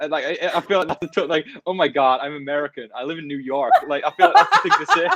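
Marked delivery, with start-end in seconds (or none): 1.7-3.7 bad, slow, drawn-out fake American accent. Answering a request to hide the accent: fake american accent. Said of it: "so you need to pull out your American".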